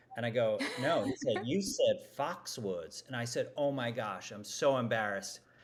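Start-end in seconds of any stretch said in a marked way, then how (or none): 1.4-3.0 put-on swooping Southern accent. Speaker retells his boss pointing out his slip in a presentation, Southern accent. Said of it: "who has a great Southern accent".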